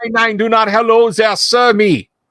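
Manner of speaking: put-on heavy Germanic accent. A man confronts strangers he caught stealing from his tenant, thick Germanic accent. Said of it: "thickly accented Germanic voice".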